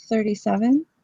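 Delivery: quiet, soft voice. Telling her age when asked, in a quiet voice. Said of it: "You said that with a quiet voice".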